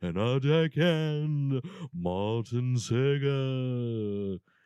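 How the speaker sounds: haunting, eerie, spooky voice. Host reads out the podcast crew's names in October, in a haunting voice. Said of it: "Very haunting".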